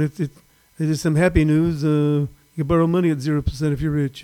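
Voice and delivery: acted television announcer voice. Imitating the guy on tv: imitating the guy on tv. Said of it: "the guy on T V going".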